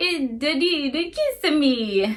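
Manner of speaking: put-on slow, far-off mouse voice with Italian accent. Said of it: "sounding Italian".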